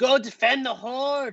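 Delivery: shrill, very high screamed goblin voice. Game master voices the goblin boss Moglau facing the dragon: Moglau screaming.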